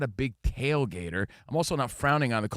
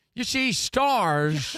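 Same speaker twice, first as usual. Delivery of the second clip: high-pitched voice stretching out the word stars; 8 semitones higher, 3 dB louder than usual. Starting a Colin Cowherd catchphrase: Jimmy Stewart impression. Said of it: "He said Colin, not Jimmy Stewart".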